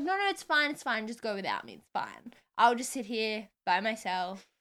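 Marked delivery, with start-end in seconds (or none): none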